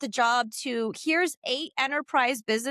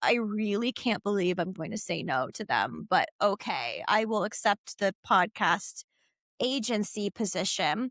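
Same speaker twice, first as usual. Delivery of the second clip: low, grudging, reluctant, begrudging tone; 5 semitones lower, 3 dB quieter than usual. Recalling accepting the podcast agency position, acting out a begrudging reply. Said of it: "So I begrudgingly was like".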